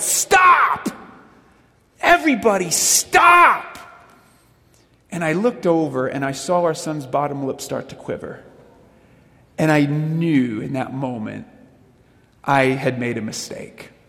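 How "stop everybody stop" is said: loud, very high-pitched, overwhelmed yell. Retelling the moment of yelling at noisy kids: imitating own yell. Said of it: "I just yelled".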